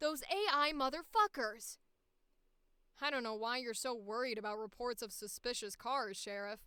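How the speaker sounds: put-on plain, deep, low, older-sounding character voice. Voicing a character who addresses the sheriff, in a low voice. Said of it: "Let's just do a regular low voice".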